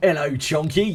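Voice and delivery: strongly British accent and pronunciation. Greeting Chunky, sounding very British. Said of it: "Just sounded very British then".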